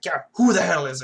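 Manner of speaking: loud, grumpy, pissed-off, irritated snap. Recapping a scene where Beverly comes to Picard's office, doing a mock-pissed-off Picard. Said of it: "he's like all pissed off".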